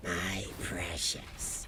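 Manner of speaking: voice dropped low, very hushed, barely voiced murmur. Trying to remember how Gollum sounded: Gollum voice. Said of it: "He's all like".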